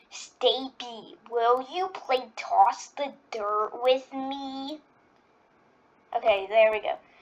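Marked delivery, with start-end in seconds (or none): 0.1-4.8 slow cartoon character voice, fully in character. Doing an impression of Marker from BFDI. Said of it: "That's my Marker impression".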